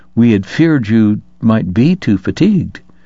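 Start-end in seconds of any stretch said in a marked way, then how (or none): none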